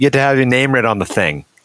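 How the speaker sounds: put-on real Boston-y accent. Repeating a line on request, in a real boston accent. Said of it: "Can you say that in a real Boston-y accent?".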